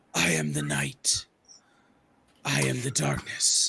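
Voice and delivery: hoarse, slow, breathy, hushed rasping delivery. Introducing the book I Am Batman: hoarse Batman voice. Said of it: "You need a lozenge".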